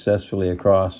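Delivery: ordinary delivery, nothing marked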